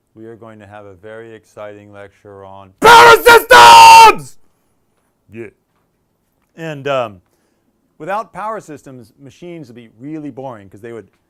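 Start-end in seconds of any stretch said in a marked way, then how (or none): 2.8-4.4 very loud, high, excited, enthusiastic yell. A teacher opening a lecture to the class: shouting enthusiastically.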